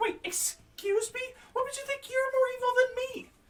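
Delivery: huffy, offended, very high-pitched indignant falsetto squeak. In a game scene, a level-headed witch co-host is offended at being called less evil than her partner; huffy, indignant falsetto. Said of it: "with my co-host, [name]. / [name] pulls a gun out of her purse and shoots [name] in the knee. / The falsetto voice doesn't come out very".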